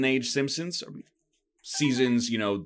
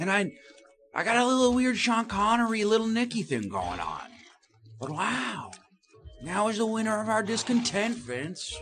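put-on hushed whisper, much higher; 9 semitones higher than usual. Insist to the others that the impression sounds right, in a hushed whisper, weird Little Nicky voice. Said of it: "I can only talk in a hushed whisper".

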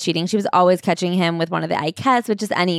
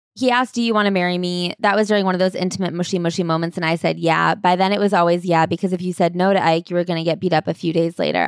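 ordinary talk

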